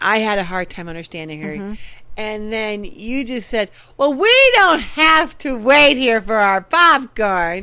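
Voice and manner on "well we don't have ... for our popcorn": loud, drawn-out, pointed remark aimed at everyone. Retelling to the listener what they had said, imitating someone talking loudly. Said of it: "really loud".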